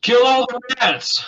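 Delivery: very high, slow, drawn-out in-character shout. Acting out a character's urge to purge the pale rats: shouting in character. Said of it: "I'm gonna shout".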